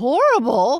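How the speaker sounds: startled, shocked cry, high and very loud. The octopus answers the girl Trot: shocked cry. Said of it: "cried the monster in a shocked tone of voice".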